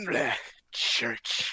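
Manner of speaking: muttered, unlike normal voice. Voicing Empyreon muttering in a voice unlike his normal one. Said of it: "in a voice unlike his normal voice mutter".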